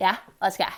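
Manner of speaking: mock Valley Girl voice. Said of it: "stereotypical, like, Valley Girl boy way".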